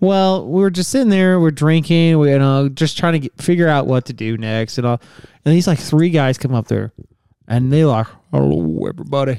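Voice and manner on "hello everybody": heavy, deep, put-on dude voice. Retelling how three guys greeted the group at spring break, imitating a deep male voice. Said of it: "they have some deep ass voices".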